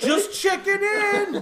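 put-on goon scream. Retelling a movie scene where a goon on a cot checks in: imitating a goon screaming. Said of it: "Like, screaming".

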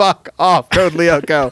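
acted-out fed-up, furious angry outburst. Retelling a reaction to a cartoon episode: retelling an angry outburst. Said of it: "I was losing it in anger".

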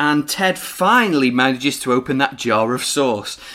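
ordinary delivery

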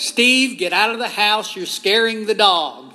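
screaming out. Retelling calling out to Steve while consoling a frightened dog, retelling a scream. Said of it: "I screamed out".

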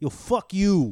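loud, forceful New York accent. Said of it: "they kind of just push out the word".

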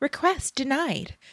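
friendly woman's voice. Quoting the audiobook's reply to a request, imitating a friendly woman's voice. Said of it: "it's this friendly woman's voice".

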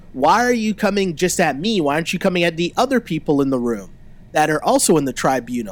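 ordinary delivery

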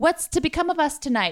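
put-on English accent. Mocking Martians in a TV series: put-on English accent. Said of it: "the Martians have English accents".

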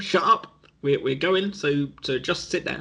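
ordinary delivery

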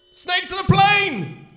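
very loud, high, shrill, drawn-out booming shout. A narrator reads a man calling out to a woman striking a famous film pose, shouting. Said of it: "shouted Jeff".

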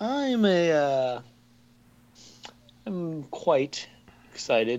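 unsure, halting, high and swooping. Answering whether excited for the Avengers: hesitant. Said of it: "quite a bit of hesitation there in your voice".

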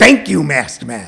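low, slow voice full of gratitude.

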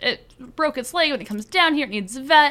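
desperate put-on character voice.

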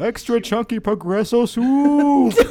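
booming, high commercial announcer voice, last word stretched. Trying out the voice the other speaker brought up, John Lithgow Progresso Soup commercial voice. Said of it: "my John Lithgow Progresso Soup commercial-like voice".

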